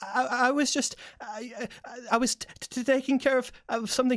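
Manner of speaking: thin, reedy, stuttering voice. Narrating overheard voices, answering an order to get back to work: thin, reedy, stuttering voice. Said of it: "thinner, reedier voice stutters its way in response".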